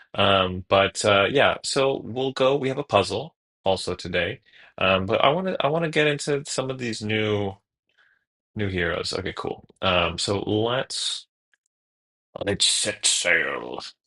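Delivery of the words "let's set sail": slow, so-so put-on pirate voice. Speaker kicking off today's session, in a pirate voice. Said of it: "that was not my best pirate voice".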